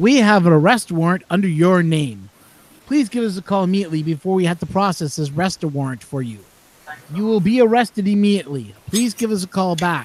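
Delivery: robotic, automated recorded-message voice. Retelling a scam call from a robot: imitating a robot caller. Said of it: "It's a robot that calls you".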